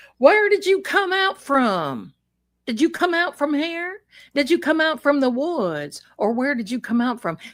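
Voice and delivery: put-on Southern sheriff voice and accent. Retelling a sheriff asking where people come out from; sheriff's accent. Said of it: "this sheriff's accent".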